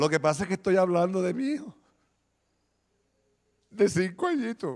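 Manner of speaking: crying while speaking. Speaking of the speaker's five-year-old son: crying while speaking. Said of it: "Estoy llorando".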